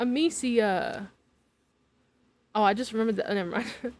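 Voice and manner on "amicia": Amicia with the mi syllable stressed. Saying the Plague Tale main character's name, stress on mi syllable. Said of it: "Stress on me".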